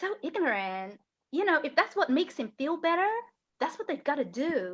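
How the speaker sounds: put-on American accent. Quoting what a woman said to her, american accent. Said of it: "I'm doing an American accent".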